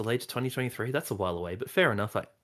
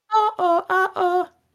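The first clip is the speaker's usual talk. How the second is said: put-on falling cry, higher and louder; 9 dB louder than usual. Imitating the game character's weird sound every time he falls: imitating Spider-Man's weird falling yell. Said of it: "I'm gonna try and im-, imitate it".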